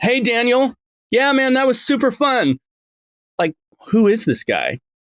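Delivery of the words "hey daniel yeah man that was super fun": very high, overblown, over-projected stage delivery. Explaining natural conversational tone by showing the wrong way: over-projected voice. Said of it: "their projection is not right".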